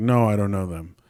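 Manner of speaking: plain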